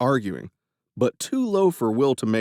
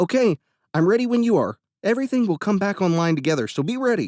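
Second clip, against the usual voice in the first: keyed-up, nervous voice, slightly pitched up; 8 semitones higher than usual. Narrator reading the hacker Benny telling Will he's ready: voice higher than normal. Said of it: "his voice a bit higher pitched than normal".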